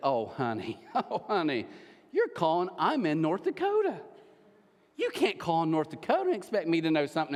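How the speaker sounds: teasing, mocking put-down voice. Retelling how a lady on the phone answered a caller: imitating a mocking tone. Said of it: "she just kinda mocked her".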